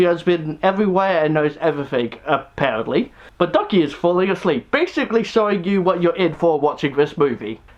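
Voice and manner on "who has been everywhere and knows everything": usual speaking voice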